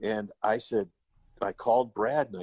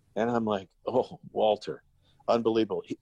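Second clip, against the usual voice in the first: plain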